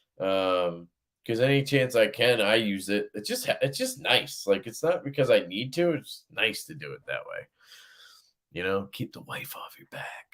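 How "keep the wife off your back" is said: hushed, very quiet, barely audible whisper. Joking about the wife while she can hear: whispering. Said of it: "so I'm whispering".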